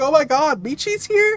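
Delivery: acted-out screaming. Retelling finding out a friend was there, retelling own screaming. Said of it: "and I was like screaming".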